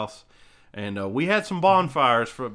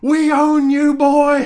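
put-on shrill, booming, very high, slowed, drawn-out drunken holler; 10 dB louder than usual. Retelling how a drunk father yelled at baseball players: imitating a drunk man yelling. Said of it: "my dad would just get drunk as shit".

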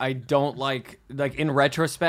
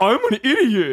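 very high, loud, dopey doofus voice; 10 semitones higher, 8 dB louder than usual. Mocking an actor's usual delivery in every character: imitating a dumb voice. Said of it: "thing he does where it's like".

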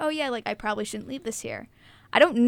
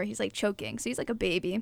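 ordinary talk

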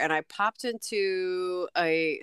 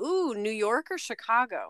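mock-eager, excited, swooping, drawn-out thrilled tone; 3 semitones higher than usual. Retelling what the person behind the counter asked: imitating an excited question. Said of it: "he very excitedly said".

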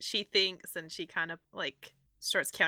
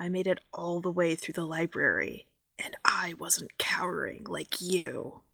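quiet whispering. Sneaking up behind a character and grabbing his shoulders: whispering in his ear. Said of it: "just whispers in his ear".

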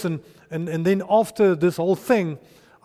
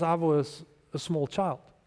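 plain

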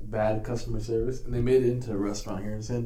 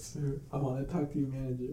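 mock tearful words spoken through sobs; 2 semitones higher, 8 dB quieter than usual. Retelling a scammer's call, imitating someone crying. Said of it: "he'll start crying".

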